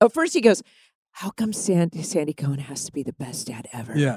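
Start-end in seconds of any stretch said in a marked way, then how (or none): 1.1-4.0 mock mutter, much quieter, lower, slower. Recounting what he said first, speaker quotes the line under his breath. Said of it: "Under his breath".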